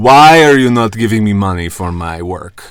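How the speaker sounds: odd, generic, Turkish-sounding accent. Apologizing to listeners for his accents, demonstrating one: bizarre Turkish-like accent. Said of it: "All of my accents are kind of like a bizarre Turkish".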